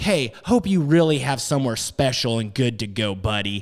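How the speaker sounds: sarcastic, jabbing tone. Retelling a final jab at an angry driver: retelling own sarcastic tone. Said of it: "sarcastic ass like I was just being".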